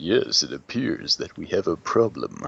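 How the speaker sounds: every word enunciated, pitch swooping. Imitating the deep voice another player did earlier, like George Takei. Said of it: "you kinda had a George Takei going".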